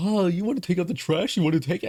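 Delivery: high, teasing, taunting tone. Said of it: "And just mimicking it".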